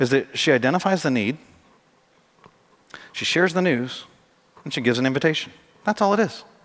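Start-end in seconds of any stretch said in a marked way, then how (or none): 0.0-4.0 very slow, clear, deliberate, carefully spelled-out phrasing. Speaker making a really important point to listeners, really slowly and clearly. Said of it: "I want to say this really slowly and clearly".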